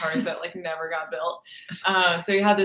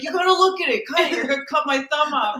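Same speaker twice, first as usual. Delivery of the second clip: mock, high, pitched-up yelling; 9 semitones higher, 4 dB louder than usual. Speaker retells a man yelling at a woman holding scissors, retelling a yell. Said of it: "and then he's yelling at Brogan".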